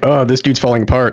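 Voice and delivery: normal talking voice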